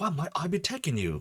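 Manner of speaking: put-on Cockney accent. Doing a voice for a scene, speak in a Cockney accent. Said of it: "I love me a good Cockney accent".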